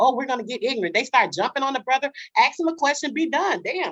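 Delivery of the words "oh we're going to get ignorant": sudden, attitude-laden delivery. Retelling what the others in the debate decided: imitating the others' attitude. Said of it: "they decide".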